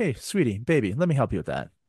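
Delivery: ordinary delivery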